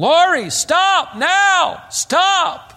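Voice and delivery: high, loud scream.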